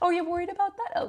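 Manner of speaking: very high, unbothered, amused, laughing, calm voice. Retelling a partner's reaction to a worry: imitating a laughing, calm reply. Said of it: "He just laughs and he goes".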